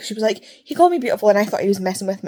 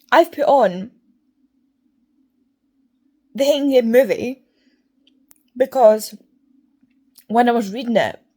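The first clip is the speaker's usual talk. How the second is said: talking with mouth full, slight lisp; 3 semitones higher than usual. Explaining why filming started, talking with chocolate in mouth, lisping. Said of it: "I've got a bit of chocolate in my mouth, so I'm lisping".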